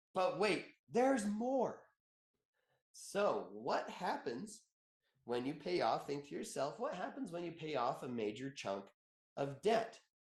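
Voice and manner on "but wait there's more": pitched-up TV infomercial announcer voice. Speaker explaining debt payoff, slipping into an infomercial announcer voice. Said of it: "an infomercial guy".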